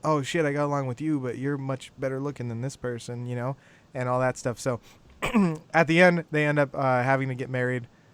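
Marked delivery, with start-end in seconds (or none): none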